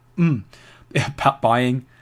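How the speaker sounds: sudden break in the voice on "buying". Talking about a wallet's exchange activity, voice cracking. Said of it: "that was a bad voice break".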